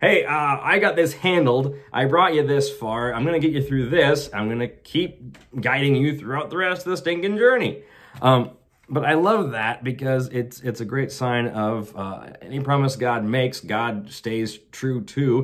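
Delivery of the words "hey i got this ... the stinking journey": exasperated, impatient, matter-of-fact, reassuring tone. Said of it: "God's like".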